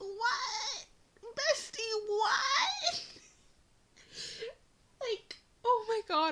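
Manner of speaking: voice breaking badly, high, very slow, drawn out. Ranting to viewers about a ship they dislike, voice cracking badly. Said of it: "my voice is cracking so bad".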